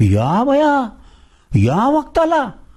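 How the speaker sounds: shrill very high exclamation. A narrator reads Mahada's wife reacting to his news, crying out. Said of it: "डोळे विस्फारून ओरडली".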